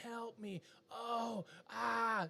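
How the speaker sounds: play-acted very slow, high, drawn-out pained wail. Retelling how the daughter hurt her ankle in the ocean: imitating someone screaming. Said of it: "And she's screaming".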